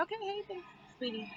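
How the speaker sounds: mocking, high sarcastic delivery. Showing how not to thank gossipers: sarcastic tone. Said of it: "That's sarcastic".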